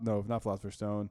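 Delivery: ordinary delivery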